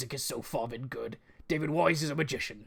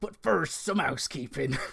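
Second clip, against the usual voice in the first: English West Country accent. Presenting E3 predictions, switching from American to a West Country accent. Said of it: "I'm doing it West Country".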